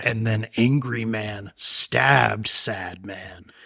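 slow, dramatic true-crime narrator voice.

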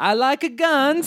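exaggerated put-on Texan accent. Showing a game where others name a place, racist Borat-style Texas accent. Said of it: "I do a racist Borat of that place".

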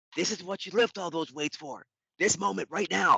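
mild, high-pitched sideline coach's yell. Retelling a famous NFL Films scene: imitating Bill Parcells yelling. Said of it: "he yells, he goes".

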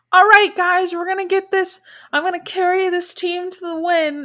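put-on very high, loud voice of a young kid. Speaker retells a TikTok creator's gaming clip, imitating a 12-year-old boy. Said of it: "he just sounds like a 12-year-old".

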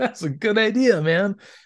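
drawn out, sounding impressed. Retelling what Wheeljack says about the chips: imitating Wheeljack sounding impressed. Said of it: "but he sounds really impressed".

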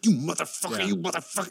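rough, creaky, clown-like voice. Retelling a stabbing scene: Joe Pesci impression. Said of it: "he kind of talks like a clown".

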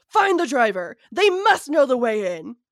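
furious, very loud, swooping pitch. Narrator voicing Ted as he continues, bubbling over with rage. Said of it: "his voice bubbling over with absolute rage".

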